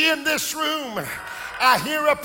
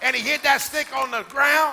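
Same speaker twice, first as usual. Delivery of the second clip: plain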